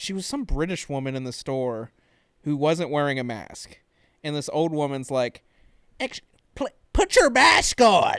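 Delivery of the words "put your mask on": very high, very loud, curt, rude tone. Retelling a store fight, imitate an old woman's rude demand to a maskless woman. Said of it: "Like she was rude about it".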